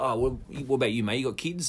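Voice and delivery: ordinary talk, nothing marked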